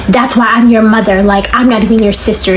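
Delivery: ordinary delivery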